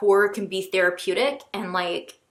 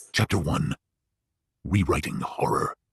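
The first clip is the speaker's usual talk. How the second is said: horror-killer voice, dropped low. Imitating how the reader starts each chapter, in Ghostface voice. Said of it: "in the Ghost Face Voice".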